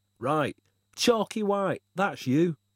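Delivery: strong regional pronunciation. Reading Libby greeting the narrator, his new friend, in a broad accent. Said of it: "he pronounced in a broadly accent".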